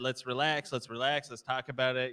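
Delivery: ordinary delivery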